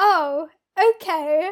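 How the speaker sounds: condescending surprised tone. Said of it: "the tone of surprise".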